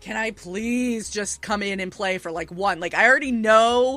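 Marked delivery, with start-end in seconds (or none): 0.0-2.8 acted-out pleading, begging tone. Speaker retells asking to join the cyberpunk game when a cast member was out, retelling a begging plea. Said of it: "I kept begging".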